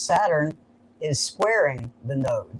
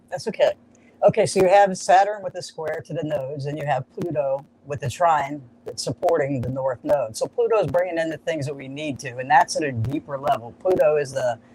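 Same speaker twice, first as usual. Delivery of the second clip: normal talking voice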